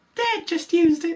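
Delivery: very high, very loud blurted, belted-out voice. Quoting a That's So Raven scene: Corey impression. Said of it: "your impression of Corey".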